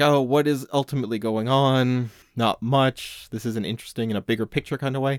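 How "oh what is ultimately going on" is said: plain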